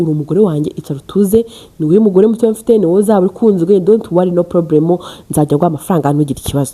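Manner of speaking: normal talking voice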